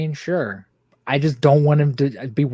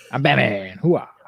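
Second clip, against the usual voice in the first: put-on gruff old actor voice. Joking about an aged actor playing Batman, imitating Al Pacino. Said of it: "He's like, "Ah, hoo-ah."".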